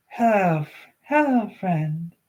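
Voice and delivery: put-on girlish voice with a slightly tinny, metallic edge. Reading a story aloud, voicing what it said: slightly metallic young girl's voice. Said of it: "slightly metallic version of a young girl's voice".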